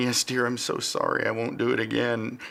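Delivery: tearful, crying, sorry-sounding voice. Retelling his reply to his yelling wife after being hit by a car, retelling a crying apology. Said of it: "I'm crying at this point".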